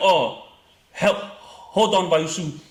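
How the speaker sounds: imitated Indian accent. Retelling what an officer said when stopping them, imitating an indian accent. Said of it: "I'm trying to give you that accent".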